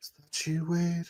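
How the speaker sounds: barely audible, very high, soft voice. The game narrator voices someone heard near a life support system: faint voice. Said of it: "faint voice. It goes".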